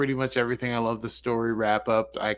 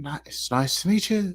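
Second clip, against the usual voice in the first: faltering, high-pitched, put-on Irish accent; 6 semitones higher than usual. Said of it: "don't do your Irish".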